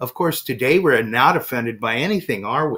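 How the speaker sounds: put-on pointed sarcasm. Performer recounting what he tells his audiences, retelling a sarcastic remark.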